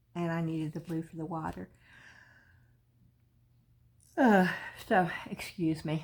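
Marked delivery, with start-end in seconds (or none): 0.1-5.0 talking through a yawn. Explaining which resin colors are out after a long day, yawning. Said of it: "Yes, I'm yawning".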